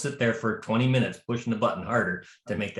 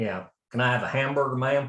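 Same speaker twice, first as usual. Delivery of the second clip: heavy, thick drawl from the American South. Retelling a man ordering a hamburger in Quebec City, in a southern US accent. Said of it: "from the southern regions of the states, way of talking".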